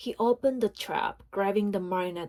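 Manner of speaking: ordinary delivery, nothing marked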